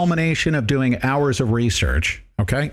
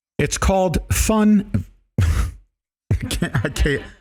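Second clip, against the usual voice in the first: high, very slow words dragged out through laughter; 5 semitones higher than usual. Announcing to listeners a program's name, laughing while talking. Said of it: "I'm laughing".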